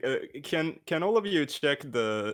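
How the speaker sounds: still laughing, high and giggly while talking.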